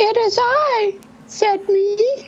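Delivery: tiny, very high-pitched squeaky voice. A mystery guest answers from behind the door, squeaky voice. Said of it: "I know that squeaky voice".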